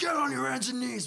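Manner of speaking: very high, raspy, rough acted-out screaming. Retelling a game, the speaker re-enacts screaming orders at another player: retelling own screaming. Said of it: "I'm screaming at this guy".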